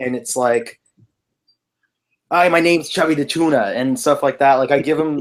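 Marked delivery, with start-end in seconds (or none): 2.3-3.7 high-pitched, chatty little cartoon fish voice. Reader demonstrating the voice they give a fish character: Chubby the Tuna voice. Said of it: "and I read his voice".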